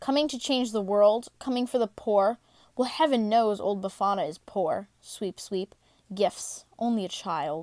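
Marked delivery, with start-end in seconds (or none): none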